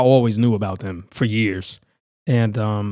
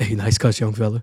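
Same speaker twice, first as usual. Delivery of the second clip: very deep, lowered voice. Retelling a compliment from Shaq while cutting hair: Shaq deep voice. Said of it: "deep voice and everything".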